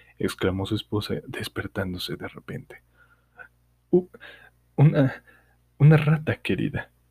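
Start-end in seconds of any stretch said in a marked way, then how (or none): 3.9-6.9 put-on quavering, trembling, pitched-up, fumbling old man voice. An old man answers his wife, just woken by a knock, in a trembling voice. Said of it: "respondió el anciano con voz temblorosa".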